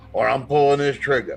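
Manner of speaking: normal talking voice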